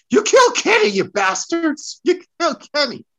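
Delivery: shrill, very high, loud cartoon-kid outcry. Reacting to a kid thrown into a wall: Cartman voice. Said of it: "channel my inner Uh Cartman from South Park".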